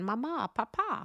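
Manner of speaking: words in a put-on German accent. Retelling a joke where the son answers his parents, in a German accent. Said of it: "I'm sure in the German accent".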